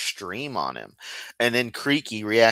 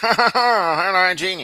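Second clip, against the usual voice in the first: higher, louder dim-witted voice; 9 semitones higher, 6 dB louder than usual. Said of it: "I do the Kent voice in day-to-day life now".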